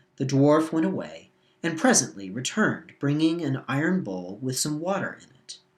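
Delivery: ordinary delivery, nothing marked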